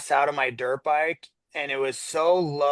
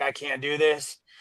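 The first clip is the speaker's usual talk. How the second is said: imitated crying voice. Retelling calling a parent at a breaking point: retelling own crying plea. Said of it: "called my dad, like, crying".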